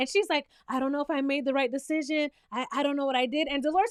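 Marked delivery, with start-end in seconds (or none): 0.7-3.5 imitated crying, tearful voice. Retelling how someone reacted after being questioned: imitating someone crying. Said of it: "and she starts crying".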